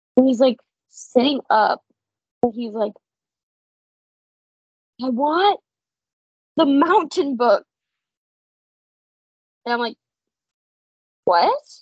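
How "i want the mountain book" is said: put-on child crying in full tears, hyperventilating, sobbing. Retelling what a boy said to him, imitating a boy in full tears. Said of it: "He's like in full tears".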